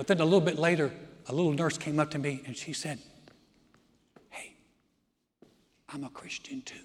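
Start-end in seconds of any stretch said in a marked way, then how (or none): 4.3-6.7 soft, close, unvoiced whisper. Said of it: "Why are we whispering?".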